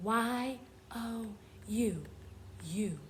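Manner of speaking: half-whispered, very slow, letter by letter. Showing learners how to half-whisper-spell a word: half-whispering. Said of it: "Let's whisper spell it".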